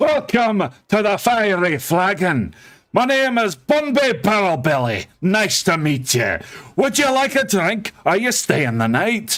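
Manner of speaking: fast, proud, bouncy sing-song delivery. Narrating to players, voicing the dwarf owner greeting them at the fiery flagon, quick and proud. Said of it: "introduces himself very quickly and very proudly".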